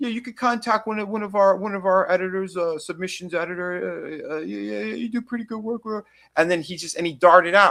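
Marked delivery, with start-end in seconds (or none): 0.0-5.8 halting, stammering, stuttering babble. Retelling how someone reacted while looking through a portfolio: imitating someone stammering. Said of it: "he started stammering and stuttering".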